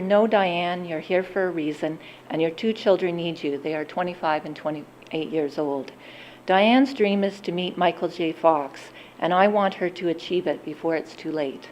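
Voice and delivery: normal talking voice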